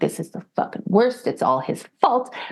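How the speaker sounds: mock angry, bitter, sour griping. Speaker retelling going to a session for families of addicts, acting out own bitterness. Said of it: "I was so bitter going over there".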